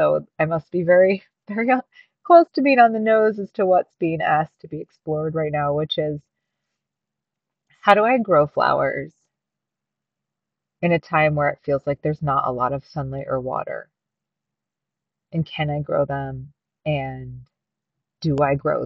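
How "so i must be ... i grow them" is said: emotional voice full of feeling, raised. A speaker reflecting aloud on their own path, getting emotional. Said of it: "I can feel myself getting emotional".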